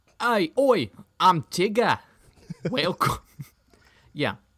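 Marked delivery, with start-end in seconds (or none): 0.2-3.2 very high, loud, slow Scottish accent. Trying a Scottish take on a cartoon character: Scottish-accent Tigger voice. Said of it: "This is Scottish".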